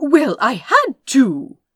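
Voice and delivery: very loud, defensive, self-justifying, drawn out. A prince answers another's question about what he did: defensive. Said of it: "he said defensively".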